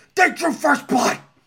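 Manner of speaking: angry shouting. At the mic, a line that has to be loud and yelled: yelled angrily. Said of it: "It's got to be kind of loud. I feel like he's yelling it".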